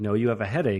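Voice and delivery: ordinary talk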